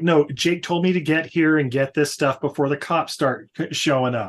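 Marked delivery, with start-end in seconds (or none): none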